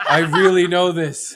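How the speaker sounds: high, loud, ranting, worked-up, lost-it angry yell. Retelling how a man lost his temper at their jokes: imitating someone yelling. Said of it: "started losing his mind and was like".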